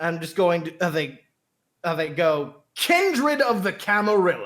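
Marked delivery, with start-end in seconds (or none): 2.8-4.5 angry, upset dad voice, high and swooping. Voicing a character's line at the microphone, the player uses an upset dad voice. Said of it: "in like an upset dad voice".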